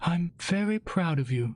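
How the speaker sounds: whispering. Reading a story, a mother telling her son: whispering. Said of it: "my mother whispered".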